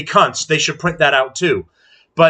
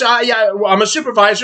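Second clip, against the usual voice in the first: snide, mocking voice with hesitant, halting start; 5 semitones higher than usual. Mocking how the second employee introduced herself: mocking imitation of a supervisor. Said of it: "the second one goes".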